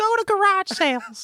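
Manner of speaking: very high-pitched voice, dragged out. Doing an impression of the other speaker doing Gary Vee: imitating someone doing Gary Vee. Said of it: "do an impression of me doing Gary Vee".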